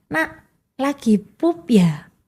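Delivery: very slow, drawn-out, deliberate phrasing. Showing how to talk to a child, speaker uses slowed-down speech.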